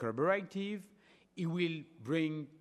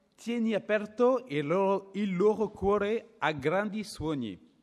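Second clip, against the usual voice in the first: terrible Italian pronunciation; 3 semitones higher, 7 dB louder than usual. Quoting a prayer line in Italian: terrible accent in Italian. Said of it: "Sorry for the, the accent, it's terrible".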